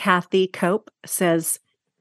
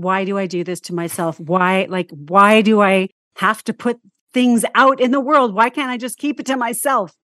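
mock sobbing in despair. A songwriter retells her breakdown after releasing an album, retelling crying in despair. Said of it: "I'm on the floor crying".

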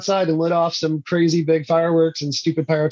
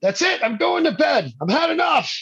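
mock shrill yell, very high and climbing; 11 semitones higher than usual. Telling of a crazy voice through the TV at night, retelling own yelling. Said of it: "I just start yelling".

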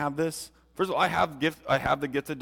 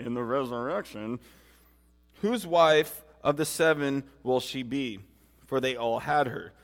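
usual speaking voice

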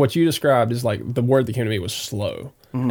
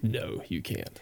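very quiet, breathy whisper; 3 semitones lower, 14 dB quieter than usual. At the microphone, the speaker tests whether they can do a Justin voice. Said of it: "I wonder if I could do a Justin voice".

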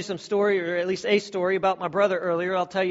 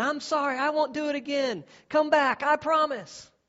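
mock high-pitched yelling; 8 semitones higher than usual. Retelling calling after someone who walked into the house, retelling a yell. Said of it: "the whole time I'm yelling".

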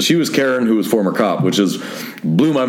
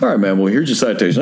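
plain

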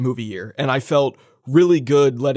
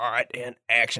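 gentle movie-actor tone; 2 semitones lower, 6 dB quieter than usual. Describing a movie's bonus features to co-hosts, Billy Bob Thornton impression. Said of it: "You did a better Billy Bob impression".

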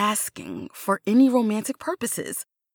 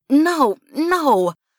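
stuttering, stammering, higher and louder; 5 semitones higher, 5 dB louder than usual. Asked whether they kissed someone, the narrator answers, stammering. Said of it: "I stammered out a response, shaking my head vehemently".

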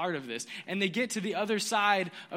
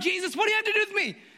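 put-on frantic, very high-pitched shout; 13 semitones higher, 6 dB louder than usual. Telling the story of jesus and the demon, speaker acts out the demon: retelling a demon's shout. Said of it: "comes sprinting down the hill shouting".

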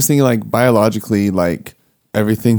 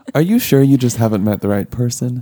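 teasing, tongue-in-cheek, put-on sincere sarcastic tone. Asking a joking question after hearing body works fine: put-on sarcastic question. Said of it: "I'm saying that very tongue in cheek".

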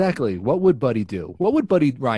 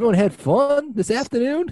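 bad put-on Australian accent, higher pitch; 13 semitones higher than usual. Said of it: "literally the worst impression ever".

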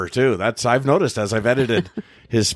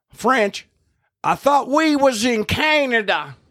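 put-on loud, brash American tourist accent, pitched very high; 13 semitones higher than usual. Retelling a woman speaking to her husband after overhearing French, in a loud American voice. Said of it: "in a loud American voice".

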